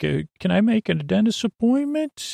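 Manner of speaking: high phone voice. Speaker demonstrates the voice used when calling someone, high phone voice. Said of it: "That's my high voice".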